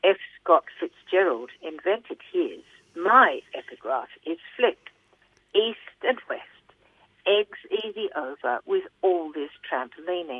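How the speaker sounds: ordinary talk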